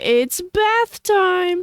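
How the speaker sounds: very high, loud animated-movie cartoon voice. Retelling a game character's worst voice lines: imitating a cartoony animated-movie voice. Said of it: "from a Disney movie".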